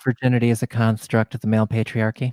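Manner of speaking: put-on public radio announcer voice. Answering the other speaker's question, switching voices for it: NPR voice. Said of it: "you pulled out your NPR voice for that".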